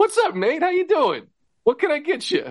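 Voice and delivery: brightest, shiniest, very high, swooping voice. Describing a film character's pleasant moments, imitating Bronson's brightest, shiniest pleasantness. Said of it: "just the brightest, shiniest".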